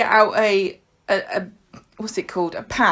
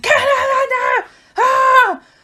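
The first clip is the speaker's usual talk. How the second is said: frantic, panicked shout, very high-pitched; 6 dB louder than usual. Retelling a dad shouting during a leak: imitating dad shouting in panic. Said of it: "he's, like, going".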